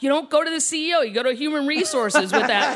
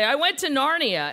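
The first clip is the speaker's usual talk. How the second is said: ordinary delivery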